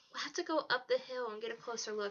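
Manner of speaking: plain reading voice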